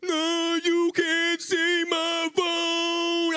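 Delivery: loud, very slow, drawn-out teasing drawl. Retelling how his girlfriend made fun of his voice, mocking imitation of his voice. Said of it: "I don't talk like that".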